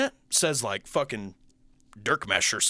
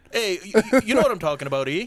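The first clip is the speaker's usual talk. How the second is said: put-on pitched-up Southern drawl crossed with Canadian accent; 5 semitones higher than usual. Imitating the voice just heard: Southern-Canadian mixed accent. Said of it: "like a mix of, like, someone from the South, but Canadian".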